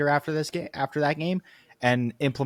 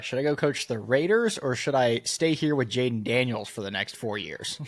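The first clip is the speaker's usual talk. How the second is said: normal talking voice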